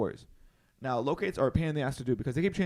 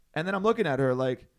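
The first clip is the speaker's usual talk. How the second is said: ordinary talk, nothing marked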